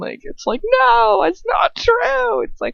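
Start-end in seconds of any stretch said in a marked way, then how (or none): 0.8-2.4 very high, very slow, guilty, defensive yell. Showing how the character sounds when she yells: imitating a guilty yell. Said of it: "it sounds like she's more guilty when she actually yells it".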